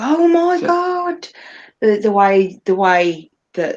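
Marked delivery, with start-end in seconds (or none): 0.0-1.3 mock shrill, very high, all-out screaming. Retelling a character's reaction to holy water: imitating Hastur screaming. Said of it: "he's proper full on screaming".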